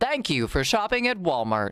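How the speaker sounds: loud, machine-like automated announcement voice. Retelling what a store's door does when opened: imitating an automated voice yelling. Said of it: "An automated voice literally yells".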